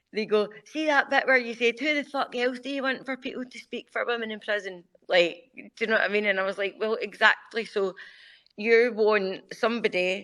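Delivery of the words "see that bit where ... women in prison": mocking put-on Scottish accent, pitched up. Recounting how others mimicked the speaker, acting out their mocking Scottish accent. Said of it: "They try and do a Scottish accent and take the piss".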